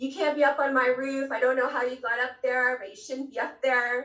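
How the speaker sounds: mock, angry, scolding yelling. Retelling how the building's customer shouted from the parking lot: imitating a customer yelling. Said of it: "He's screaming at me".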